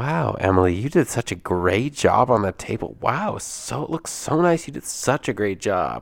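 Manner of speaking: acted condescending, patronizing tone. Acting out how someone praises another person's work, in mock-condescending praise. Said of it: "that sounds so condescending the way you said that".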